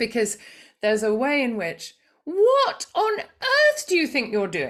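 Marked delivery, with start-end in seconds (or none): 2.2-4.7 very high, swooping, cross-sounding British voice. Speaker shows the mode they slip into with children around: not-really-angry upper register. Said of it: "this upper register that can come in that's not actually angry".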